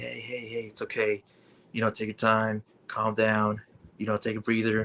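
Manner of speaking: low, dropped, reassuring voice. Retelling how a wrestler calmed a nervous fan: Rey Mysterio low voice. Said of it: "with the low voice and everything".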